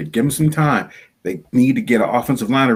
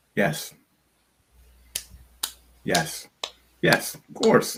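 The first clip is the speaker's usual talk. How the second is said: slow, breathy, drawn-out, whispered sarcastic tone; 6 semitones higher, 6 dB quieter than usual. Answering whether the team can take the next step: sarcastic yes. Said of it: "I think that's a sarcastic laugh".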